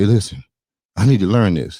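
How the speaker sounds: acted, weepy, crying and pleading voice. Retelling a student begging a teacher for lessons: imitating the Karate Kid crying. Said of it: "he's crying like".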